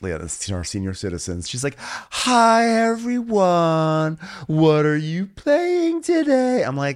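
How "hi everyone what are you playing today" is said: put-on condescending voice, very high, very slow. Describing how Linda talks to senior citizens, imitating Linda's condescension. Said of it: "talks so condescendingly to older people".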